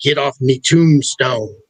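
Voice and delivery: put-on thick, heavy Irish accent. Retelling a sentence heard through a voice box: thick Irish accent. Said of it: "almost an Irish accent".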